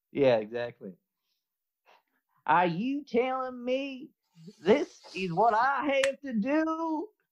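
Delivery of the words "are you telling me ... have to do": very high, put-on whiny Southern twang. Trying the accent again after being told to add a whine: whiny Southern accent. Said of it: "that accent is priceless".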